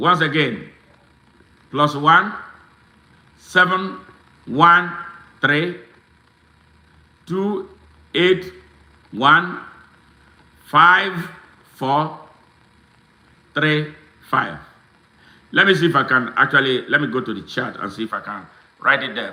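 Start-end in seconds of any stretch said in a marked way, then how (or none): 1.7-14.6 slow pace. Reading out a contact number so listeners can write it down: slowly. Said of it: "I'm gonna say it slowly".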